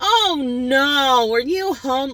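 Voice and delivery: put-on very slow, high, drawn-out, judgmental, condescending voice. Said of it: "such a judgmental tone".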